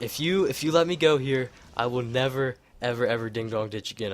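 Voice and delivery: ordinary talk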